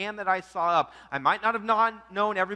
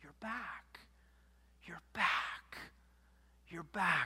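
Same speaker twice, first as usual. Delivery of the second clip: hushed, soft, breathy whisper, very quiet; 2 semitones lower, 13 dB quieter than usual. Retelling how a wife greets her returning husband: imitating a whisper. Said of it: "she whispers".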